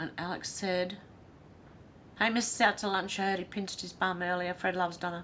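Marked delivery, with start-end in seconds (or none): none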